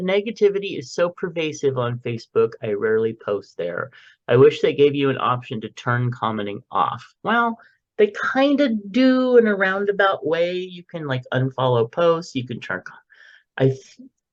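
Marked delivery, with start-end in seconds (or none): none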